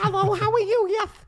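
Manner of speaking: squeaky, very high, loud lisping voice. Doing a guy from a seven eleven, in a high-pitched lisping voice. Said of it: "he's got a lisp and a high pitched voice".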